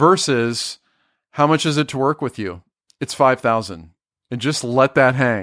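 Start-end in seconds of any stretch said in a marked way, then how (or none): 3.0-3.9 confident downward inflection on "five thousand". Advice on stating your price to a client, falling, confident statement. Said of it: "I'm not ending with upwards inflection. It's not a question".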